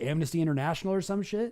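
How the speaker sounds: ordinary talk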